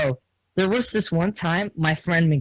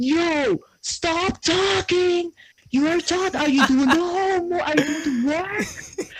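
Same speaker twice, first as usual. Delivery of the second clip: imitated scream, higher; 12 semitones higher than usual. Retelling a teacher scolding a student for talking: imitating the teacher screaming. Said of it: "the teacher just starts screaming".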